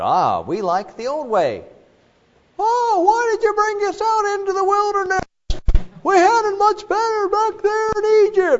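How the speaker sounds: very high, animated, swooping cartoon voice. Speaker acts out Israel's complaint in the wilderness, VeggieTales imitation. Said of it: "That's my imitation of VeggieTales".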